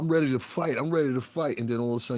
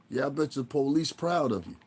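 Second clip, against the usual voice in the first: normal talking voice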